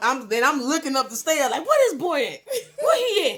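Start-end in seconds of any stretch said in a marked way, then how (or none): 1.7-3.4 very high-pitched, swooping, angry voice. Retelling looking up the stairs for the boy: imitating own angry self. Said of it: "This is how mad they made me".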